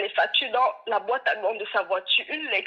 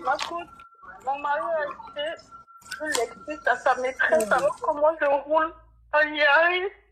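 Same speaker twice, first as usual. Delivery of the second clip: high, tearful speech broken by sobs; 5 semitones higher than usual. Telling the coach about her husband on a call: crying while talking. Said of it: "arrête de pleurer et puis explique".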